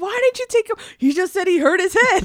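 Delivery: acted-out furious yelling, very high-pitched. Retelling Mom yelling at Dad about a head injury: imitating Mom yelling. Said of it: "she yelled at my dad".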